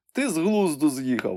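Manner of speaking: high, groaning moan. Narrator reads Marcus protesting in a story, groaning. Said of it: "простогнав він".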